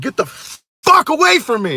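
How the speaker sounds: high-pitched, all-out put-on screaming. Speaker retells a woman yanking them toward her car, retelling a scream.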